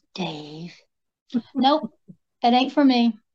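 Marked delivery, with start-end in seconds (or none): 0.1-0.7 eerie voice, lower and quieter. Quoting a film line to another speaker: spooky voice. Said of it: "That spooky voice".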